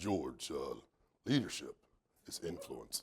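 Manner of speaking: very deep, short, hushed voice. Quoting a good friend on leadership as a hint to listeners, use a deep, short John Maxwell voice. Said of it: "with his deep, short voice".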